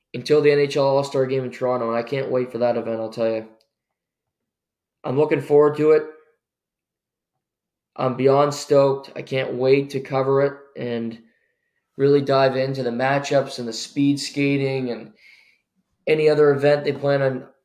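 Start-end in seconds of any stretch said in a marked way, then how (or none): none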